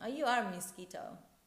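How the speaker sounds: teasing, mocking, sarcastic tone. Retelling a guy who phoned about the speaker's no-sugar eating: mimicking a sarcastic guy. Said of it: "a guy called me sarcastically".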